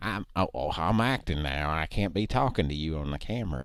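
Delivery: put-on hillbilly voice. Acting out a bit part in an imagined movie: Christopher Guest hillbilly voice. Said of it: "I sound a little bit like Christopher Guest doing a hillbilly character".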